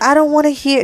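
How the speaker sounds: high, exasperated, fed-up screaming outburst. Retelling what the other speaker said on that day: imitating a friend screaming.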